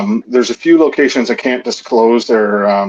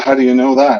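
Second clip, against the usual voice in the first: usual speaking voice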